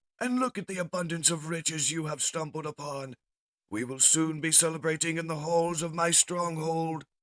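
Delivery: shrill, crazed, very high mad-scientist robot voice. Voicing the mad Decepticon scientist in a story. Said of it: "The mad Decepticon scientist states".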